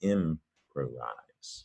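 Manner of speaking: "improvise" drawn out very slowly. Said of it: "You would improvise something".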